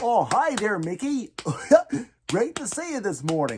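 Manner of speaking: animated dog voice. Teaching how to do Goofy's voice, demonstrating his rhythm: Goofy voice. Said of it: "let's figure out the rhythm".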